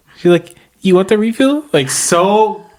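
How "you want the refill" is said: put-on very high, teeny, tiny little voice. Retelling how a tiny waitress offered a refill, imitating a tiny little voice. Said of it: "She even her little voice".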